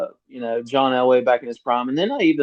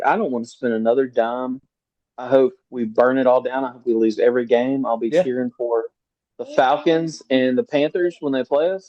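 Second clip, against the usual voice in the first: plain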